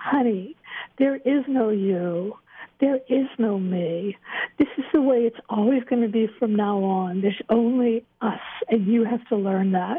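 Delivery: tender, calm, affectionate, loving delivery. Recounting what he said when she asked how he could do this, retelling a quiet, loving voice. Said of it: "he said in this quiet, loving voice".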